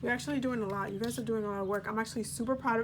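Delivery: very fast, excited, rattled-off speech. Giving a Pisces reading to viewers, the excited speaker is talking really fast. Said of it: "I'm talking really fast".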